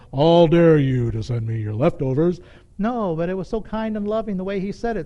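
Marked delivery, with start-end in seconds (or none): 0.1-2.3 full thundering voice, much louder. Telling a story, imagining God rebuking the speaker, in a thundering God voice. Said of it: "in a full thundering voice".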